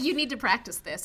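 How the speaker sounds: ordinary talk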